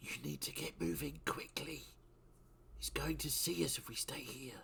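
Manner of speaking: projected stage whisper. A player's character flies down to Thaddeus in the game, whispering. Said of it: "and just whisper".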